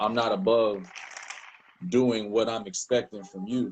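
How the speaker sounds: normal talking voice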